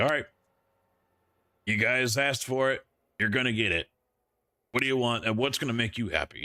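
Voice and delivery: fast, heated, angry outburst, acted out. Retelling how a man reacted to them rejecting it, imitating an angry man. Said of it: "he's getting all like angry, and you could hear it in his voice".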